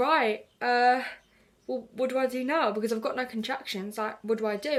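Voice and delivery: plain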